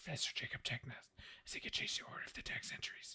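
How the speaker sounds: breathy whisper, very quiet, barely audible. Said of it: "You're gonna whisper".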